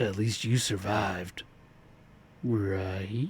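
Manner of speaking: very slow, creepy, unsettling line delivery. Redoing a line in a scene, trying it creepier: creepier delivery. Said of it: "Can I do that creepier?".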